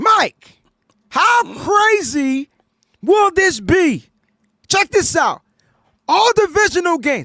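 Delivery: very high-pitched, shrill shouting. Turning to Mike after telling someone to listen, yelling. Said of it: "I'm yelling because".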